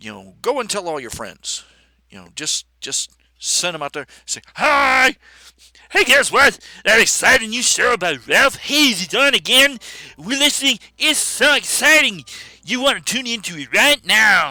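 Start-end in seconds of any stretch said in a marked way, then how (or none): 4.3-14.5 high, loud, silly dumb-sounding voice. Retelling telling friends the show is live, the speaker uses a very stupid sounding voice. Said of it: "sorry for giving you that very stupid sounding voice".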